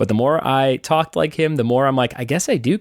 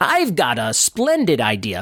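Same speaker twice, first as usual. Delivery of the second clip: swooping, put-on cartoon voice. Doing another cartoon voice: put-on cartoon character voice. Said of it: "Here's another one".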